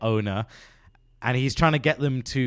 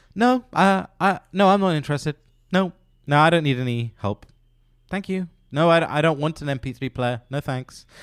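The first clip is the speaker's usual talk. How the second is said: put-on dry, disinterested, deadpan delivery; 3 semitones higher, 3 dB louder than usual. Retelling how a rep played the most difficult customer imaginable, retelling a deadpan refusal. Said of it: "he just does everything so deadpan".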